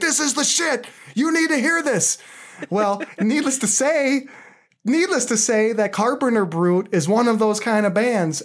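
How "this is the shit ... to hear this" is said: mock screaming, much higher pitch. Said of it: "I'm screaming like".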